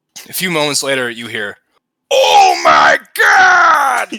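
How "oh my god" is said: exaggerated anime shriek, very high, very loud, swooping pitch. Narrating a scene where an old man comes running, over-the-top anime Japanese voice. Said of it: "in a very over top anime Japanese voice".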